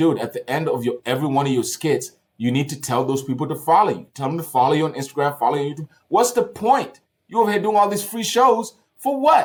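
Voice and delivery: ordinary talk, nothing marked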